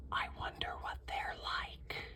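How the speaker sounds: very quiet, hushed, soft, wondering whisper. Narrator reading Mezzo Piano's line as a new neighbor arrives, whispering. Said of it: "Piano whispers".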